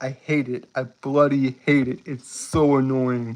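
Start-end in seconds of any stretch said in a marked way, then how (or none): none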